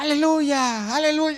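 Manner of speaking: loud, high-pitched shouting. Retelling a skit where a classmate enters: imitating someone shouting hallelujah. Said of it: "sale uno de mis compañeros gritando".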